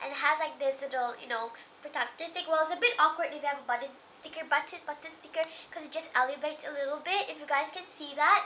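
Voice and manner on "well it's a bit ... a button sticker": rushed, very fast talking. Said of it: "sorry if I'm talking really fast".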